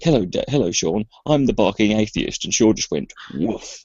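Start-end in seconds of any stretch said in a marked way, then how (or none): 0.0-2.4 mock, fake British accent. Retelling how he answered Sean, in a fake British accent. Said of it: "he put on this fake British accent".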